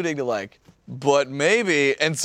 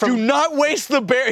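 put-on yelling, higher pitch; 9 semitones higher than usual. Retelling how Nick reacted to the announcement: imitating Nick yelling at the TV. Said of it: "yelling at the T V".

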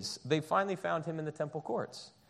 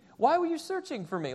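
snarky, higher-pitched quick delivery; 9 semitones higher than usual. Retelling Jesus's reply to his searching parents, mock-snarky 12-year-old Jesus. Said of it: "12-year-old snarky Jesus".

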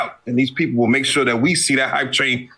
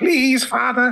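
put-on little British boy accent, higher; 11 semitones higher than usual. Begging for more hype as a little British boy: little British boy voice. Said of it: "just like a little British boy".

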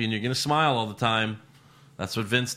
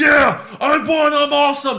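mock fired-up, excited boast, pitched high; 10 dB louder than usual. Retelling a title win, imitating Tony Nese pumped up. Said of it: "he was pumped".

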